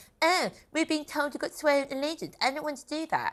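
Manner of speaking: put-on, high-pitched, mocking naysayer voice. Mimicking social media naysayers, in a mocking voice for naysayers. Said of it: "in that voice".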